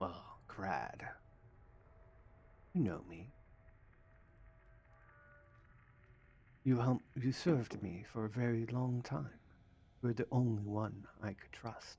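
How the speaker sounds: soft, hushed half-whisper. Narrator voicing a hidden figure half-whispering back to crad, half-whispering. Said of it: "when he whispers back".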